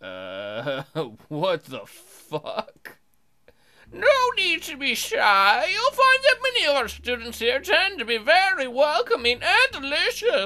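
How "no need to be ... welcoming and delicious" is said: put-on old, very high-pitched voice. A player voices the school principal greeting a new transfer student, old Principal Hammerhead voice. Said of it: "an old Hammerhead hobbling towards you".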